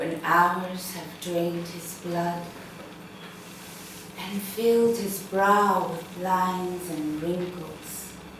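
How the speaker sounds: soft whisper spoken just to oneself. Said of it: "could you just whisper it, do the whispering exercise".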